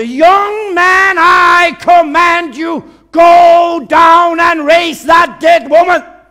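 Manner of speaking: very high, shrill, very loud, drawn-out commanding yell. Retelling how a woman with fire in her eyes commanded him: imitating a woman shouting. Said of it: "Hun råbte".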